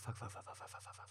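breathless, half-whispered. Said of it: "I needed you off my lap just for a second to breathe".

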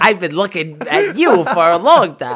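animated, swooping cartoon monster voice. Riffing on a story scene, acting out the character: Mike Wazowski voice. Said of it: "Mike Wazowski with his big eyes is like".

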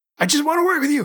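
pleading voice, pitched way up. Acting out an elderly driver talking to his GPS: mock pleading as Gary Busey. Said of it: "trying to find a spiritual connection".

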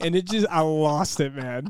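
normal talking voice

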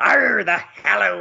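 put-on, rough, high pirate voice with "arr". Teasing a co-host's accent attempt: put-on pirate voice. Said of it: "I thought you were gonna do a pirate there".

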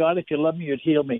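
ordinary talk, nothing marked

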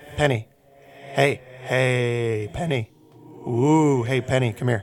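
eerie ghostly voice, "hey" drawn out. A game narrator voices a ghost calling from inside the bathroom, ghostly voice. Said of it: "you hear a ghostly voice from inside".

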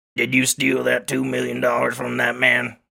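put-on rough-edged, creaky character voice. Doing his bit because the actor is in this movie, Billy Bob Thornton voice. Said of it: "now I get to do a new voice. Billy Bob Thornton is in this movie, so I get to do my thing".

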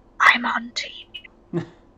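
very slow, drawn-out, hushed whisper. Playing a character leaning close to another character: whispering. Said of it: "and just whisper".

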